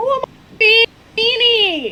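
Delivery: piercing shriek, very high and loud. Reacting in character to being called a weenie: yelling. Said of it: "She yells".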